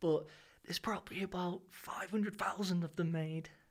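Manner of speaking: whispering. Speaker talks about his guitar so the others won't hear: whispering. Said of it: "I'm going to whisper about all these".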